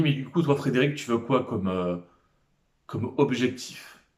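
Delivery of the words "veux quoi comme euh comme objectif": ordinary talk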